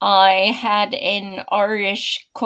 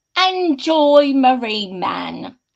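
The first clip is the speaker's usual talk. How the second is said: pretend British accent; 4 semitones higher than usual. Podcast co-host introducing herself on the show, in a put-on British accent. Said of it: "You sound very British today".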